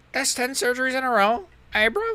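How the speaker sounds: very high-pitched, bullying, taunting voice. Speaker attempts Leon Edwards bullying Ben Askren, Leon Edwards impression. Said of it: "Impression of Leon Edwards".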